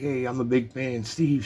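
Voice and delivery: put-on keen, eager voice calling out. Retelling a buddy calling out again to a man signing a ball, retelling a holler. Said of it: "my buddy hollers again".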